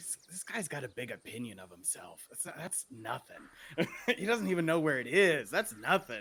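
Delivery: audible stage whisper. Leaning over to a companion during the scene, in a stage whisper. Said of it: "like I'm whispering".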